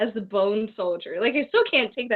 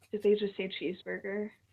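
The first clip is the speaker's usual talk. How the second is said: mock dry, flat, level deadpan; 10 dB quieter than usual. Retelling a remark by a friend who doesn't watch wrestling: imitating a deadpan friend. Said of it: "in her deadpan self".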